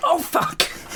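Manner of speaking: screamed out, high-pitched mock scream.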